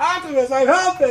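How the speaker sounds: put-on scream. Retelling a comic where a character jumps into a fight, Hot Rod screaming. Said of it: "he just starts screaming".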